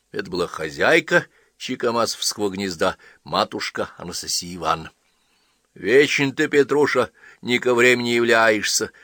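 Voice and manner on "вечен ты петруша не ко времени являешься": cantankerous, grumpy, nagging scolding outburst. Anastasia Ivanovna lashes out at her husband Petrusha; grumpily lashing out. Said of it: "сварливо набросилась она на супруга".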